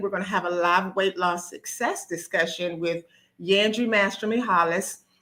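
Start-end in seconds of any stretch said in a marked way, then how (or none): none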